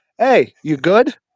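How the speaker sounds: put-on smart-aleck tone. Retelling how one might confront someone: imitating a smart-ass tone. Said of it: "In a smart ass type of way".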